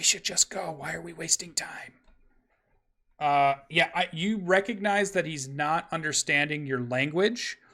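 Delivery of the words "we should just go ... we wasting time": half-whispered under the breath. Voicing a dwarf who urges Tristan to leave: half-whispering. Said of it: "the dwarf whispers to Tristan".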